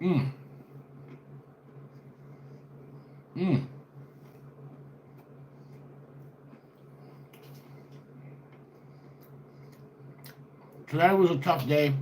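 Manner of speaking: talking with mouth full. Opening a video to viewers while eating, talking with mouth full. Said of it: "talk with my mouth full".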